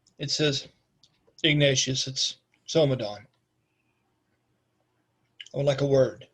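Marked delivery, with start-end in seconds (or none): 1.4-6.1 somber, weighty, grave, solemn delivery. Voicing a visitor at the door asking for a word: grave and quiet voice. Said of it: "In a grave and silent voice".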